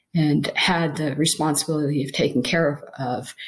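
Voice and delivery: ordinary talk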